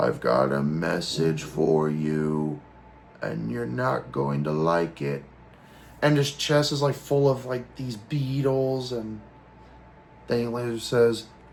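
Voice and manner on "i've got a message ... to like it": very low, warbly possessed tone. Retelling what a beetle-covered man says, in a warbling possessed voice. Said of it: "kind of like in a warble or I guess possessed voice".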